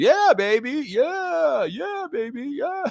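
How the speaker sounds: play-acted very high, shrill, stretched-out, drawn-out hollering. Retelling what a heckler behind the broadcast crew kept yelling: imitating a fan yelling. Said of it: "that guy would not shut up".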